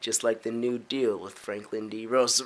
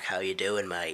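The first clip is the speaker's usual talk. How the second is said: put-on Outback Australian accent, lower and quieter; 4 semitones lower, 4 dB quieter than usual. Showing off the voices one can do: Outback Australian accent. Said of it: "I can do the Outback".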